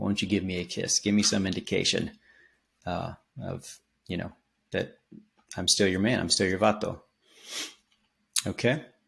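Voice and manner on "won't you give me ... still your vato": ordinary talk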